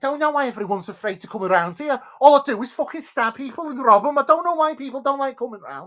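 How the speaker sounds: put-on Scouse Liverpool accent. Correcting the voice to sound more from near liverpool: put-on liverpool accent. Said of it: "I'm more near Liverpool".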